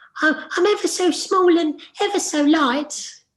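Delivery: tiny voice, pitched way up high. Voice actor going through their range of characters, in the Ear Mouse voice. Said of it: "I was also ear mouse who goes".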